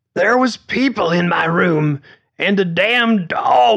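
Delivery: choking and hacking cough on last word. Reading a story aloud, a character answers the night-shift worker, choking on the last word. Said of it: "Mildred got choked on the last word and hacked and coughed".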